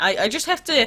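ordinary talk, nothing marked

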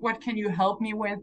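plain

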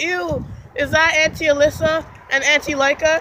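ordinary delivery

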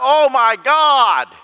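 slow, loud high-pitched crying out.

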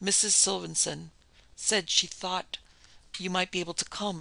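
plain reading voice

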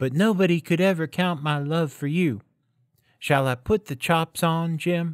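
suddenly earnest, high, serious, sweet and tender. A wife speaks to her husband on christmas eve, suddenly serious and sweet. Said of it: "I had my hair cut off and sold because I couldn't have lived through Christmas without giving you a present".

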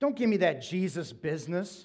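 mock-contemptuous tone. Retelling a woman's reply once talk turned to Christ, imitating her disdainful tone. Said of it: "she said it with complete disdain in her voice".

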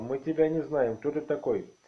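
ordinary delivery

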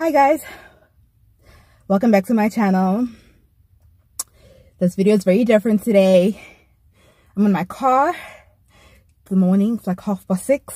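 out of breath, breathless. Vlogger greets viewers from the car after rushing down the stairs, out of breath. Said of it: "I'm out of breath because I was rushing".

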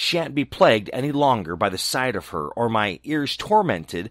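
ordinary delivery, nothing marked

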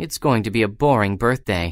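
usual speaking voice

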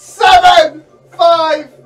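high-pitched, loud shouting.

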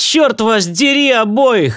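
sudden high-pitched outcry, crying out. Cursing both of the others, he cries out. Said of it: "вскричал Мастерс".

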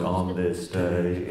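radio feature announcer voice. Showing how a radio feature title was announced: radio feature announcer voice. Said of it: "I had to do it in that voice".

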